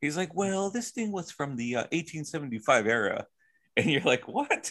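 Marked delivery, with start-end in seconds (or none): 0.3-3.2 put-on British accent. Describing a dressed-up TV man talking about a painting: imitated British accent. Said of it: "usually has a British accent".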